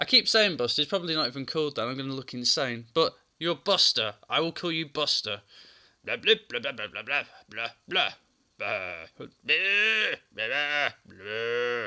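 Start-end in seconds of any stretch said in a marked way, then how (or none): 6.0-11.9 put-on low, drawn-out drunken old drill sergeant gibberish. Voicing a character's gibberish chatter in an old drunk drill sergeant voice. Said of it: "in my head it sounds like an old drunk drill sergeant".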